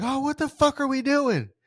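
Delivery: mock very high, frustrated yell. Speaker recounts how she reacted to a losing game: imitating her yelling at the TV. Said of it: "was yelling like me at the T V".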